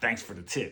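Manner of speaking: snippy, attitude-filled tone. Retelling a reply to an aunt's advice: retelling a line said with attitude. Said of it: "Said it with an attitude".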